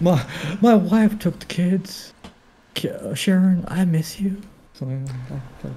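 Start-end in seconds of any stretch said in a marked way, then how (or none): 0.0-4.4 put-on drunk voice, pitched higher. Doing a drunk Bob Ross going off on a tangent: drunk Bob Ross voice. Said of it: "you go off, like, a whole, like, tangent".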